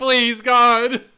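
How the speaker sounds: mock sobbing. Acting out a passenger begging the flight attendant, mock sobbing.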